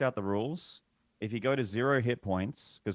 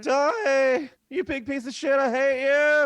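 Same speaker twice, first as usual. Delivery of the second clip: very high, loud, slow yell with cracking voice; 9 dB louder than usual. Retelling a game fight, imitating Amos's voice cracking. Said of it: "And his voice cracks".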